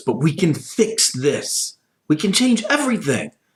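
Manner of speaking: high-pitched, quarrelling, pushing-back arguing tone. Voicing one side of a fight between two women: arguing. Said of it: "Razia and the Countess arguing".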